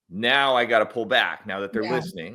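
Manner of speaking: ordinary talk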